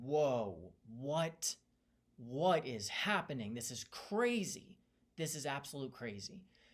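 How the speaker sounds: put-on slow, stunned, shocked disbelief. Retelling a family scene, own reaction at the time: retelling own shocked reaction.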